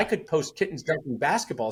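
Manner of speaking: normal talking voice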